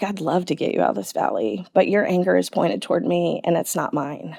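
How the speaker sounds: soft, very quiet speech. Retelling what was heard in the shower: quoting a quiet voice. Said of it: "And just so quietly".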